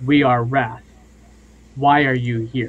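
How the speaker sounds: low beast voice. The narrator voices a creature in the brambles questioning the new arrivals, Wrath's much deeper voice. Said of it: "in a much deeper voice than the lion provided".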